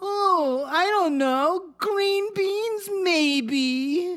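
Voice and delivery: very high, very slow. Acting out a female character's reply about vegetables for dinner, imitating her talking voice. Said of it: "She's, like, saying".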